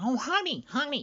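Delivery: put-on very high, sitcom-like New Jersey accent. Imitating a woman who talked like Fran from The Nanny: New Jersey accent. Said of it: "Talked like the nanny named Fran".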